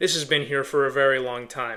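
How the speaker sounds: said on a sigh.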